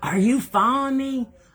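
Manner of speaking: shrill, very high, loud yelling. Retelling how the man he was following yelled at him, retelling a man's yell. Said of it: "And he's yelling at me".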